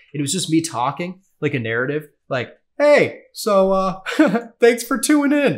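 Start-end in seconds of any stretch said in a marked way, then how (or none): 2.8-5.6 very high, self-conscious, awkward, drawn-out voice. Retelling a first solo podcast recording: imitating own awkward podcast intro. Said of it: "I sound like that awkward, like, you know, neighbor".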